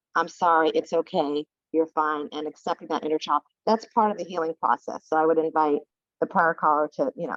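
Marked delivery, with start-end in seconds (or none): none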